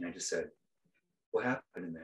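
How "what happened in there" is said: softly lowered, low, gentle voice. Retelling a moment in a hallway, the speaker repeats the question they asked: lowered voice. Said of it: "I lowered my voice".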